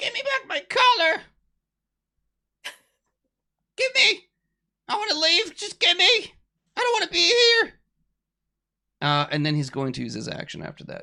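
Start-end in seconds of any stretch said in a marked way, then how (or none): 0.0-7.7 very high, shrill, squeaky little voice. Voicing a devil who turns to Goose and wants to leave, in a really high squeaky voice. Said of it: "He has like a really high squeaky voice".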